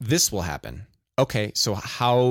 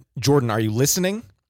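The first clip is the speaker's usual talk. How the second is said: put-on very stern, cutting, fatherly voice; 2 semitones higher than usual. Retelling how his father interrupted a lecture to him, imitating his father's stern tone. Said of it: "very sternly said".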